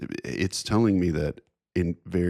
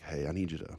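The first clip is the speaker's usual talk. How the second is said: quiet, hushed, quieter voice; 10 dB quieter than usual. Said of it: "I'm trying to say it real quiet".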